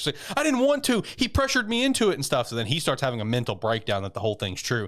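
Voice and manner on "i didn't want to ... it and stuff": very high, panicky, freaked-out voice. Retelling how she answers him: imitating someone freaking out. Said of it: "starts freaking out".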